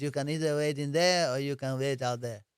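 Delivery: poor put-on Israeli accent. Retelling what a woman said to the speaker, in a horrible Israeli accent. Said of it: "my Israeli accent's horrible".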